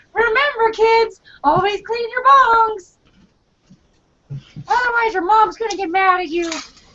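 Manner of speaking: very high, squeaky cartoon voice. Addressing kids like a cartoon of the future, Mickey Mouse voice. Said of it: "I sound like Mickey Mouse".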